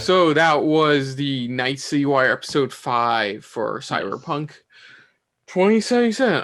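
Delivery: winded, breathless, short of air. A host wraps up the episode recap on the show, out of breath. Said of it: "I'm a bit out of breath".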